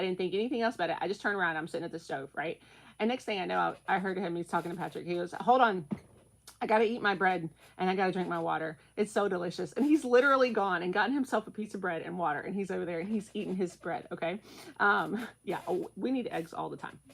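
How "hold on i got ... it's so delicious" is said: ordinary talk, nothing marked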